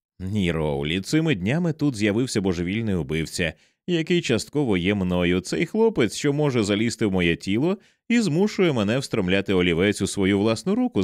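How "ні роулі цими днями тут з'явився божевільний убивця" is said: usual speaking voice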